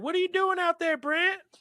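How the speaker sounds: very high-pitched voice calling out. Retelling practicing his draw outside as a kid, imitating his mom calling. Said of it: "They're like".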